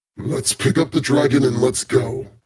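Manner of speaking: deep put-on dragon voice. Game player voicing his character, telling the other two to move on: Zaroka's deep dragon voice. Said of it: "in his uh, deep dragon voice".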